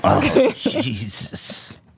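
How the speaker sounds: hushed, under-the-breath gasped exclamation. Repeating a played soundbite, imitating Kenneth Copeland whispering. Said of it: "Why is he whispering it?".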